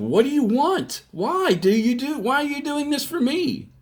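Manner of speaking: screaming, pitched very high. Retelling confronting a man before he left: retelling a scream. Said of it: "I was screaming at him".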